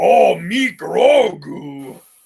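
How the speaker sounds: loud, high-pitched puppet monster voice. Trying out Grogu as played by other characters, do a Cookie Monster voice as Grogu. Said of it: "Cookie Monster's Grogu".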